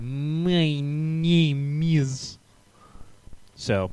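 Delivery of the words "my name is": put-on Russian accent, pitched up, drawing out "my". Act out how a Russian man started talking, in a put-on Russian accent. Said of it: "he started talking in that Russian accent".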